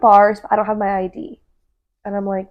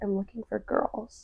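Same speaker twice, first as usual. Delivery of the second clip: very quiet, lowered, hushed and drawn-out voice; 15 dB quieter than usual. Retelling what a man said to the speaker and a friend, imitating a lowered voice. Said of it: "he lowered his voice, like dropped".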